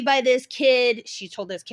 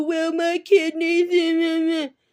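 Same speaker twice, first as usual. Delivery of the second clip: mock very slow, high, drawn-out whining; 6 semitones higher than usual. Imitating a complaining parent of a child being expelled: imitating a whining parent. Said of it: "the parents whine and complain and go".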